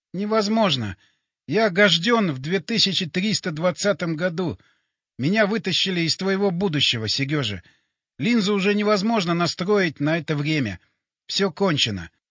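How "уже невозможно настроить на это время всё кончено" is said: ordinary delivery, nothing marked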